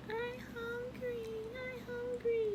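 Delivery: tiny kitten voice, very high, soft, very drawn out. Speaker on a live stream imitating her in the background, little kitten voice. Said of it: "talking like in a little kitten voice".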